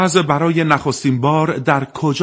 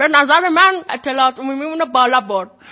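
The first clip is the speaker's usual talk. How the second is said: put-on elderly woman voice; 11 semitones higher than usual. Quiz host sums up the contest in an old woman voice. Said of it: "میشه با صدای پیرزن بگیم".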